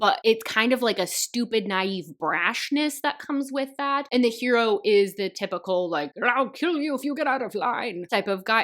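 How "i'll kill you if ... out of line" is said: put-on voice of an elderly man. Describing the hero's typical attitude, the speaker voices him in an old man voice. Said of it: "I don't know why I used an old man voice for that".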